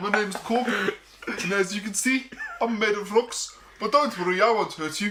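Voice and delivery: put-on high-pitched South African accent with South African vowels. Pushed to try one after a single beer, he attempts a Korg impression, sounding South African. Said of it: "That's South Africa".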